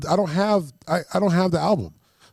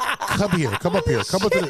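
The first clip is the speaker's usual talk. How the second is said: stern, commanding angry father voice. Retelling calling a girl up to the front, imitating an angry dad. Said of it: "You're like somebody's angry dad at the club".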